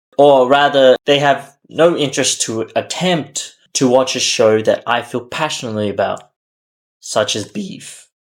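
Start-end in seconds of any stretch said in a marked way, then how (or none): 7.0-8.0 cracking, half-whispered, soft, breathy voice. Talking about a show he loves, speaker's voice cracks: voice cracking. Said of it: "sorry, voice crack".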